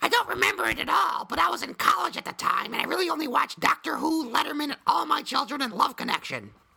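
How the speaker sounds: very high voice. Reading out a listener's message in her voice: imitating Dina's voice. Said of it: "I'll actually read this in her voice".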